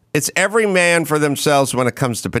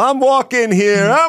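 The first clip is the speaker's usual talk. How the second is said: New York accent impression; 9 semitones higher, 4 dB louder than usual. Speaker retells what a guy walking on the sidewalk said; new york accent impression. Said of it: "Like real New Yorker".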